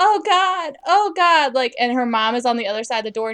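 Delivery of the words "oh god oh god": very slow, drawn-out, high-pitched scream. Retelling a scene where a woman is tied up for an exorcism; mock screaming.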